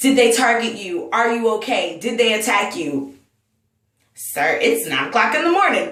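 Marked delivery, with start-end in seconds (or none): 0.0-3.2 mock tearful, pleading delivery. Retelling a man who came running up, imitating someone in tears. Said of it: "in tears".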